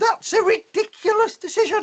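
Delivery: pretend-cross, very high voice. Showing an audience how an exclamation mark makes a sentence sound: cross. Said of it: "make your sentence sound a bit more cross".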